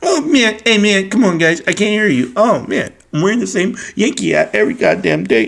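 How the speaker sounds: derisive, taunting, swooping sing-song voice. Mocking a rival YouTuber who tried to get tough in chat: mocking impression of Review Dork. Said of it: "I started going like this".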